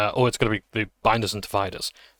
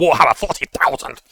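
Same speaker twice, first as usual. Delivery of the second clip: put-on really angry shout, louder; 4 semitones higher, 6 dB louder than usual. Repeating the shout they do at the end of this one, mock-angry shout. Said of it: "really, really angrily".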